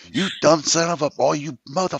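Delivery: high drill-sergeant-style screaming rant. Retelling a sergeant's outburst after he ripped his pants: imitating a sergeant screaming. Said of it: "he's screaming at me".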